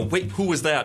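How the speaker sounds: ordinary talk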